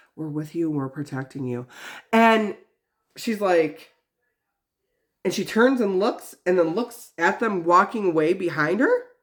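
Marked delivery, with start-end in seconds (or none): 0.2-1.7 low, hushed, passing half-whisper, barely audible. Retelling what a man says as he walks past someone: half-whispering. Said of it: "Like he whispers when he walks by you".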